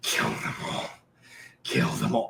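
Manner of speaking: harsh, rough, rasping villain voice. Voicing Salvage speaking through a human figure, in a harsh accented voice. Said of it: "the accented, harsh voice of Salvage echoing".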